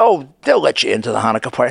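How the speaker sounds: ordinary talk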